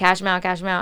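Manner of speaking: ordinary delivery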